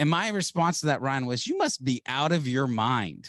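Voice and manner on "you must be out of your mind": normal talking voice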